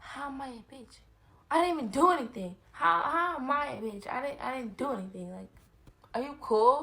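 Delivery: mock mad, high, loud frustrated outburst. Complaining about a friend's insult to another speaker: frustrated and mad. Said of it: "You sound like you a little frustrated and mad".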